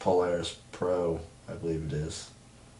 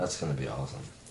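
dry, unenthusiastic sarcastic tone; 4 semitones lower, 5 dB quieter than usual. Answering another speaker about a fighter who takes his place: sarcastically unenthusiastic. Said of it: "You sound thrilled".

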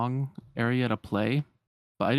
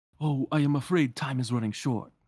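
clumsy, unconvincing put-on French accent. Acting out a scene as Lumiere, in a bad Lumiere French accent. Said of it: "I can't do French accents".

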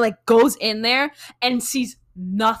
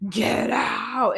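put-on crazy voice, quieter; 5 dB quieter than usual. Telling a haunting story, the speaker imitates the spirit's crazy voice. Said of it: "did this like crazy voice".

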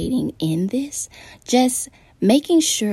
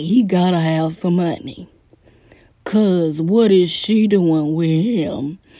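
dumb, goofy, silly put-on voice; 4 dB louder than usual. Speaker imitates an onlooker judging a couple, in a stupid put-on voice. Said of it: "I don't know why I did that stupid voice".

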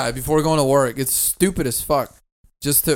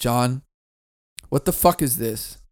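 lower-pitched voice; 2 semitones lower than usual. Recounting finding a man's furry costume, retelling his own reaction. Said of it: "I'm like".

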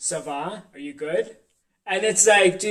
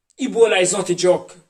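loud, clumsy, bad fake Jamaican accent attempt; 2 semitones higher, 5 dB louder than usual. Trying an accent after being asked about jamaican: attempted jamaican accent. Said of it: "I don't think that was really Jamaican".

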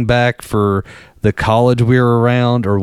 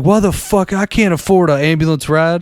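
imitated, pitched-up, indignant yelling outburst; 6 semitones higher than usual. Retelling picking a man up from the hospital, imitating someone yelling. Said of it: "he's yelling at us".

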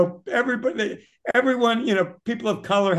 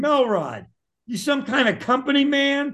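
put-on shout, higher in pitch; 6 semitones higher than usual. Retelling how coworkers yelled at him over a skipped break: imitating coworkers shouting. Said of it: "everybody started shouting".

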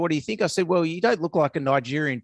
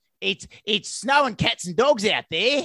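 put-on broad ocker Australian accent, higher; 4 semitones higher than usual. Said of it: "very Australian accents".

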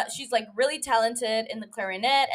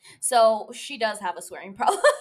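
ordinary delivery

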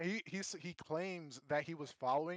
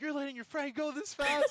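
mock yelling, imitated scolding tone; 8 semitones higher, 6 dB louder than usual. Retelling a story, quoting a man who yelled at them about their speed: retelling someone yelling. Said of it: "so he's yelling at us".

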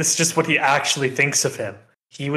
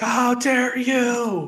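shrill, shrieking, screaming shout, very high; 9 semitones higher than usual. Describing a JoJo Part 4 fight in the rain, the speaker imitates a screaming character. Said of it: "screaming and shouting".

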